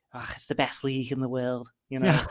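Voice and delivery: football pundit voice, enthusiastically hyping. Mocking football pundits who hype the league: Jamie Carragher impression. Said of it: "That is an incredible impression".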